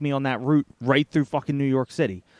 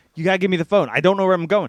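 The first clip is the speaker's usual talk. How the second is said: mock all-out yelling, fast and rushed; 4 semitones higher, 4 dB louder than usual. Recounting a breakdown while trying to find the right exit, retelling own yelling. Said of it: "and I'm just fucking yelling".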